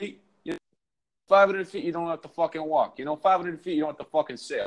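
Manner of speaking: put-on New York-accented voice. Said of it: "they were like".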